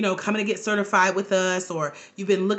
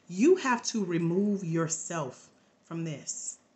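gentle, tender, sweet soft half-whisper; 3 semitones lower, 6 dB quieter than usual. Retelling being alone in a corner and hearing God speak: imitating God's sweet half-whisper. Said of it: "God just sweetly whispered".

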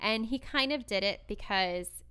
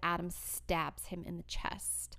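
usual speaking voice

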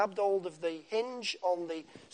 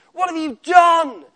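shrill, booming, very loud, high, furious yell; 9 semitones higher, 11 dB louder than usual. Speaker imagines God coming to look for Adam, shouting: mock-angry shout as God. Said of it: "with an angry voice".

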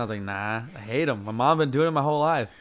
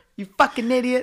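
put-on angry voice, higher; 10 semitones higher, 3 dB louder than usual. Retelling what a mad mom said to a drunk son: imitating a mad mom. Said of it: "she was so mad at you".

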